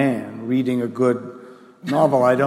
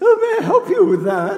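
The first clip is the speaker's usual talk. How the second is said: loud, very high-pitched voice; 5 dB louder than usual. Speaker recalls a cookbook author towering over them at the cereal shelf, imitating her cooking voice. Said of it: "in her cooking voice".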